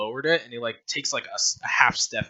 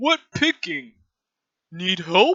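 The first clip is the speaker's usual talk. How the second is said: very high, loud, dim-witted dumb-brute voice; 10 semitones higher, 5 dB louder than usual. Voicing the dumb one, who offers to help pick herbs: dumb brute voice. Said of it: "the dumb one".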